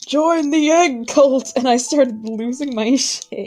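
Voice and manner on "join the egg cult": put-on old man voice, pitched up. Retelling what a friend said, the speaker quotes them in their best old man voice. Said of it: "in their best old man voice".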